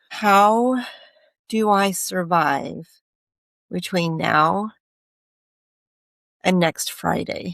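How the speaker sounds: very slow, halting speech, words barely coming out. Retelling asking him a question when barely able to talk, speaking really slowly. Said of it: "I was speaking really slowly".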